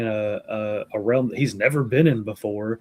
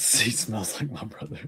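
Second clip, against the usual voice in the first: acted, flustered, panicky, freaked-out voice; 6 dB quieter than usual. Retelling a scene from a book, imitating someone freaking out. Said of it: "kind of freaking out".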